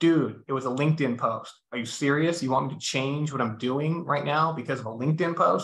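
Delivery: ordinary talk, nothing marked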